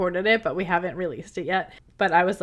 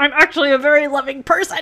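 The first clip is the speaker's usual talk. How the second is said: raised, pitched-up, forced out through gritted teeth; 7 semitones higher, 8 dB louder than usual. Recapping what a man said in a scene, imitating speaking through gritted teeth. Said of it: "says through gritted teeth".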